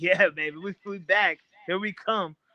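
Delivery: high, slow, drawn-out overjoyed cheer. Imitating Jerry Jones clapping at the game's end: imitating Jerry Jones celebrating happily. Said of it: "he's over there clapping like".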